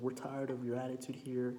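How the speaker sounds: plain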